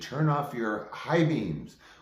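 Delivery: mock half-hearted drunken yell. Retelling a night drive when a drunk driver yelled: imitating a drunk man screaming. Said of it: "he's screaming at me".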